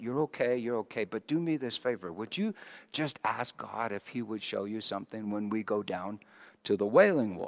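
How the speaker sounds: whispered voice. Retelling what was said back to her at the Temple Mount: retelling a whisper. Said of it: "I whispered something back to her".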